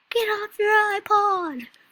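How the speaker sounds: very high, shrill, bossy, drawn-out yell. Acting like a kid who shouts at everyone: yelling at everyone. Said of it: "yelling at everyone".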